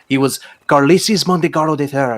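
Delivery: put-on Spanish accent. Introducing a character modeled on a Domani horse lord: Spanish accent. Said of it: "good accent".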